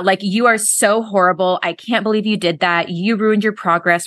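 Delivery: put-on mean, self-critical voice. Voicing the critical voice we have in our heads, a mock-mean inner critic. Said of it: "And it's really mean".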